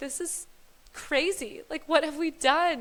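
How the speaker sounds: crying, tearful high voice. Retelling telling the husband about the pregnancy: imitating own past crying. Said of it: "I just started crying".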